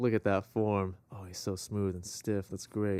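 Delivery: put-on whisper. Retelling a whispered remark made to the camera during a game: retelling a whisper. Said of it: "whispering it to the camera".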